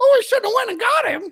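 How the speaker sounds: mock, high-pitched wail with mocking tone.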